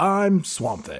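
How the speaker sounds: acted old-fashioned news announcer voice. Joking about a movie monster: Swamp Thing as old-school news announcer. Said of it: "sounds like an old school television or radio news announcer".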